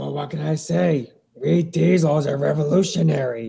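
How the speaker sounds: put-on engine character voice. Voicing Diesel, answering a question about the name Twinkle Toes, Diesel voice. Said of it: "Some people like to do the CGI Diesel voice".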